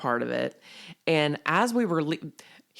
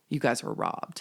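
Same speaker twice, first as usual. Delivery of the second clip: mock quiet, hushed speech; 2 semitones lower, 4 dB quieter than usual. Retelling what audience members told them while filing out: imitating someone speaking quietly. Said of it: "just real quietly say".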